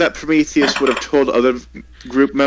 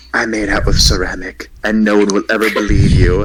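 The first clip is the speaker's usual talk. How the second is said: whispering softly, lower pitch; 5 semitones lower than usual. Whispering secretly to Prometheus during the scene: quiet whisper. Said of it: "can I really quietly whisper to Prometheus".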